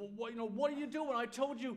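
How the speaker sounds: fatherly voice. Father retelling what he said to his kids, in a fatherly voice. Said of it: "go in my fatherly voice of".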